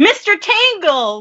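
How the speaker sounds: play-acted, shrill, blurted shout pitched very high. Retelling how Carly answered a trivia question: imitating Carly yelling out. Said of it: "Carly yelled out".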